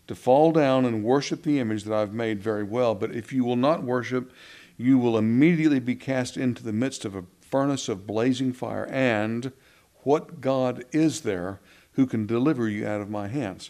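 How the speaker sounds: usual speaking voice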